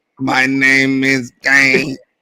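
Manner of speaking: slow, dragged-out throaty voice. Joking that someone sounds like Kane: Kane voice. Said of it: "he sound like Kane with the motherfucking thing".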